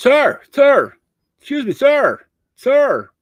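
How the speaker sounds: very slow, very high, drawn-out hollering. Retelling a cook calling out across the cafeteria: imitating a cook yelling. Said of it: "he's yelling across the cafeteria at me".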